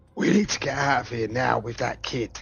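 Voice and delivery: loud stage whisper, forcefully pushed out. Calling down in character to get out with the kid: whisper-shouting. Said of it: "I'll sort of whisper, shout down".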